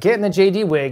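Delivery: normal talking voice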